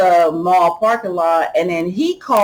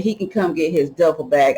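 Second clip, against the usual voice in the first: plain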